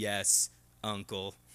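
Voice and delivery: very low, soft, quiet robotic voice. Describing a scene where Barbara answers her uncle, in a robotic voice. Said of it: "she replies in a very robotic-sounding voice".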